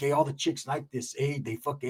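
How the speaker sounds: talking like a street gangster. Retelling what a friend's son said about his hair: imitating gangster talk. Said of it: "he talks like a gangster".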